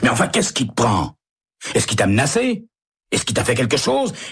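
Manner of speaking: sudden angry outburst. Narrator reads Emery replying to Stella's plan to leave, suddenly angry. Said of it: "Le placide Emery se met brusquement en colère".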